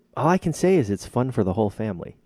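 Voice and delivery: very heavy, dripping sarcasm. Summing up a movie for the other speaker: very sarcastic. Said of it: "You're saying that very sarcastically".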